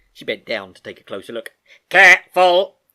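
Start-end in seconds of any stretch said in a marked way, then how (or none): 1.9-2.6 very loud, sudden, high shout. Reading a story aloud, the computer warns the girl: shouting. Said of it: "shouted the computer".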